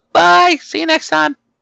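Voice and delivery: voice gone very high and loud. Signing off at the end of episode 16, in a high-pitched voice. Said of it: "Why did my voice get all high pitched".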